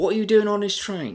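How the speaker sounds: very high, loud, shrill, poor put-on Australian accent. Retelling police questioning someone on a train, in a bad australian accent. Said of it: "That's my Australian accent".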